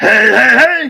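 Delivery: loud, high, belted-out cartoon voice. Showing people who think he's mad what a voice is, Fat Albert voice. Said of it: "I'm Fat Albert now".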